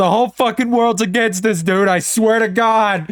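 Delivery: high-pitched, play-acted, all-out top-of-the-lungs yell. Retelling a movie scene where the line rings through a canyon: imitating Jay shouting at top of lungs. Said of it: "top of his lungs".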